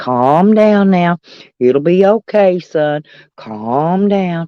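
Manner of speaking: whispering very low. Retelling how he trolled old Jess Cook, re-enacting a low whisper. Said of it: "I kept whispering real low".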